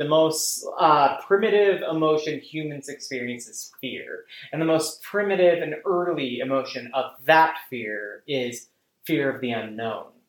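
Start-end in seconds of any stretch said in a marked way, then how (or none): none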